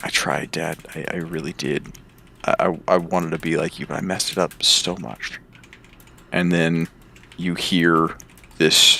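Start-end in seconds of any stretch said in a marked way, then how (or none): 0.0-5.4 put-on hushed, quiet young man's voice. Narrating a scene, the speaker voices a young man talking to his dad, quiet young man's voice. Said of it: "a young man quietly saying".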